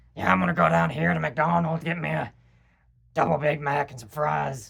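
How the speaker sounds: brash, loud, rough guy voice with creaky edge. Describing a guy who drinks and lifts weights: imitating how he talks. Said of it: "he talks like".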